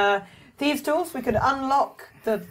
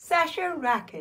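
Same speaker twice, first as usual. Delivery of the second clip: soft, cheery, robotic computer voice; 5 dB quieter than usual. Told the bit is just saying one's own name, saying it cheerily. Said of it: "I'll say my name cheerily".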